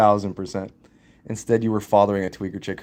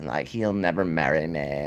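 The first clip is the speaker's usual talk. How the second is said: put-on mocking lisp, lower pitch; 4 semitones lower, 4 dB quieter than usual. Retelling what a woman said, imitating a lispy voice. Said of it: "She had like the lispy voice".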